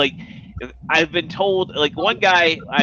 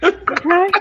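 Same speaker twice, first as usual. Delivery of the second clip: put-on high-pitched old-man character voice. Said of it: "Herbert from Family Guy".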